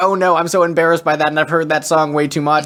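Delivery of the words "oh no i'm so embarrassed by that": plain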